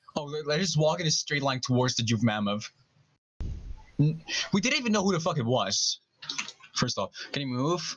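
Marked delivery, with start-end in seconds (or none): none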